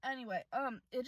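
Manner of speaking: normal talking voice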